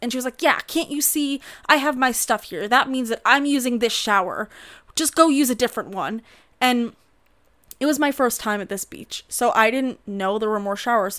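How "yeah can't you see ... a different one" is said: irate, angry yelling woman's voice, scolding outburst. Retelling how a woman at the beach showers yelled at her: imitating a woman yelling. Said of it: "she starts yelling at me".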